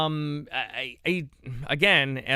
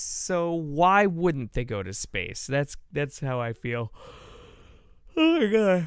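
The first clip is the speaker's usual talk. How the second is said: yawning mid-sentence while talking. Streamer talking to viewers, yawning while talking. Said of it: "I can't stop yawning".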